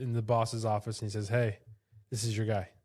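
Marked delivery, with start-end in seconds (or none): none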